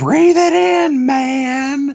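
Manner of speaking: very high, very slow, stretched scream. Retelling what a supervisor shouts at work: imitating someone screaming. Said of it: "you can hear my supervisor just screaming".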